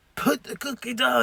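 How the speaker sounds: gravelly put-on character voice. The speaker quotes a movie line in a gravel voice. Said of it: "my gravel voice".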